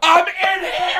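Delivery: very high, loud, shrieking yell. Retelling an old man opening the bathroom door on him, retelling a scream. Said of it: "And I'm screaming".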